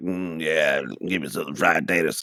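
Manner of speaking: slow, drawn-out, deliberate character voice. Quoting the one scene seen of the movie: Sling Blade impression. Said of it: "that piece where he's like".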